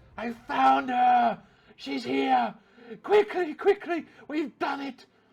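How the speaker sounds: excited near-screaming. Game master voices Rain calling out to the party, almost screaming in exuberance. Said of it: "she's almost screaming in exuberance".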